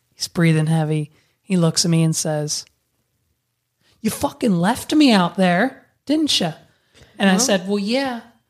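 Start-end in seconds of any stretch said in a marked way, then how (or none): 4.0-6.5 put-on slight Scottish-sounding accent. Retelling what a man said after stumbling out of the ocean, Scottish accent. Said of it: "that kind of sounded Scottish".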